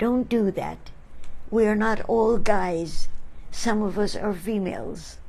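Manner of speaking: ordinary talk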